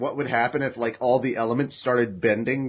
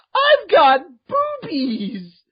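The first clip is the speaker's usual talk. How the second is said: very high, gleeful, delighted, swooping squeal; 7 dB louder than usual. Acting out Juan looking down at Korra's body: Juan's delighted exclamation. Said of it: "and he goes".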